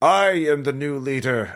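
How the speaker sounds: slow, high, crackling voice as over radio static. Voicing a voice heard over crackling radios: crackling radio voice. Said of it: "all the radios crackle like".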